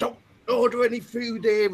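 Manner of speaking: furious woman's loud, shrill angry scream. Recounting a woman who came out of a pub and screamed at them, retelling a woman's scream. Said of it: "screamed to us".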